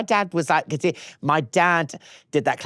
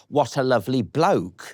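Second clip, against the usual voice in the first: usual speaking voice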